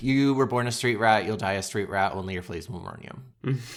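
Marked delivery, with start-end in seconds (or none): none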